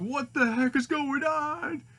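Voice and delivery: alarmed, confused cry, high and slow.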